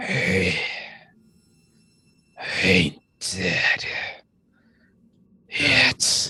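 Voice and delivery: slow, rasping, raspy corpse voice. Voicing a corpse that speaks up: raspy voice from a corpse. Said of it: "you hear a raspy voice emanate from the corpse".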